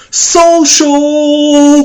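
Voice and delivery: very high, stretched-out, drawn-out yell. Retelling how a friend ran into a party: imitating someone yelling. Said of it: "just yells".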